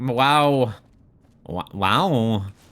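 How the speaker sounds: strange, stop-start assumed voice. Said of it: "I don't know why I turned into Christopher Walken".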